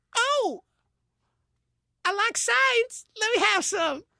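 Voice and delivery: very high-pitched nerdy voice. Acting out Steve Urkel showing up on tour: Steve Urkel voice. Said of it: "Steve Urkel shows up? It'd probably be a little something like this".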